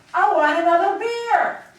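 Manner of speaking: booming, very loud, high-pitched, slow, drawn-out bellow. Showing how to act out a man's words for a jury, shouting. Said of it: "you shout".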